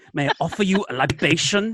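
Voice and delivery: put-on, screen-drama style German accent. Quoting a line from the episode's screenplay, in a german accent. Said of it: "what will sound good with a German accent?".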